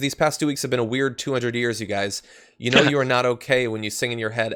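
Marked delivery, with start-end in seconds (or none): none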